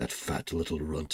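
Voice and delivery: muttered under the breath. Voicing a character insulting someone: muttered under his breath. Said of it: "he says under his breath".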